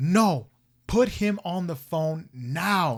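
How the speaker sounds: slow, loud, drawn-out screaming. Retelling a man on the phone demanding to be put through, mock-screaming. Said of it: "And he's screaming".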